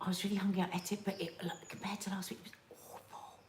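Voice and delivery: hushed, barely audible, very quiet whisper. Retelling the reply given to a waitress who asked about the meal, retelling a whisper. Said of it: "And I just whispered like that".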